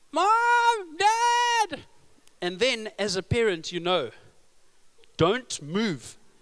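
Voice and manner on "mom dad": put-on high, loud, shouting child's voice. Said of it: "who's shouting".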